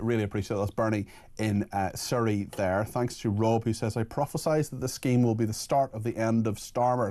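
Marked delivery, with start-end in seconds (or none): none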